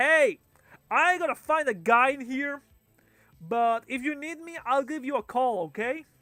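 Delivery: loud projected carrying holler. Voicing a character going down the stairs with a player: talking very loudly. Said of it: "He talks to you very loudly".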